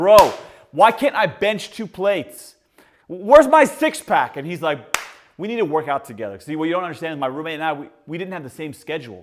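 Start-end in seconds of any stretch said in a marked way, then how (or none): 0.0-4.4 loud, raised shouting voice. Recalling yelling at his roommate who acted as his trainer, retelling yelling at trainer. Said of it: "I'm yelling at my trainer".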